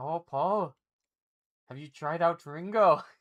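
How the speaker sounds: put-on sliding into an Irish accent. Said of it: "That was like more of an Irish accent".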